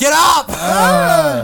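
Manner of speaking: very high, shrill yell that swoops. Imagining a 5 a.m. wake-up call on Kennick time, retelling a yell. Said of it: "I'm like yelling".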